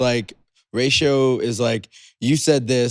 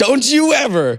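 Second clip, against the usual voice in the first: put-on yell, higher and louder; 13 semitones higher, 5 dB louder than usual. Retelling what a driver's wife yelled at the speaker: imitating someone yelling. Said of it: "his wife yelled at me and said".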